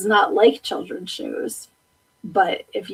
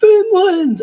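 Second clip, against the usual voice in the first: shrill, very loud cartoon shout, belted out high; 11 semitones higher, 8 dB louder than usual. Quoting a favorite cartoon line: Patrick Star voice. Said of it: "when Patrick goes".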